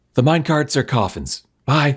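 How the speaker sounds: high stage whisper. Whispering a warning in character just before going down: stage whisper. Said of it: "once again stage whisper and just say".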